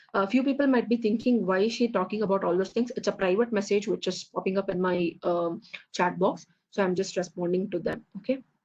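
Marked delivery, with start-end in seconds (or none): none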